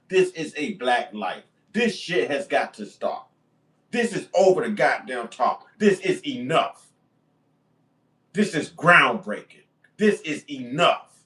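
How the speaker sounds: pissed off, angry voice. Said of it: "just as pissed as I am".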